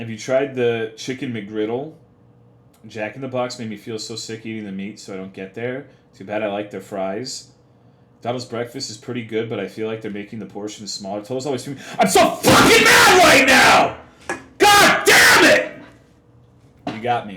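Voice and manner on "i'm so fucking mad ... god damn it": very loud, very high, shrill, dragged fake angry yell. Playfully confirming to listeners they get mad, with a fake angry yell. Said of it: "I yelled to confirm that I was mad".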